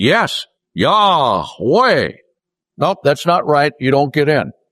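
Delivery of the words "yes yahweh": swooping put-on Texas accent on Yahweh. Telling a joke, the speaker voices a man answering God: Texas accent. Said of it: "he had a Texas accent".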